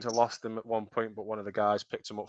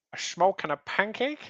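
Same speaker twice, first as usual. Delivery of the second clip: very high, squeaky, bad Dutch accent; 10 semitones higher than usual. Urged to do Dutch, the speaker quotes a line in a Goldmember Dutch accent. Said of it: "Go on, do Dutch then".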